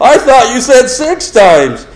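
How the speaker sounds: very high, squeaky voice. Retelling a student's reply about a class assignment, in a high-pitched voice. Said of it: "in a high-pitched voice".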